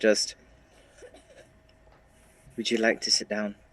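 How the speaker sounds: speaking in hushed tones. Playing Magna in a game scene, turning to Ivor: hushed voice. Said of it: "just kind of hushed voices, not to to be too loud".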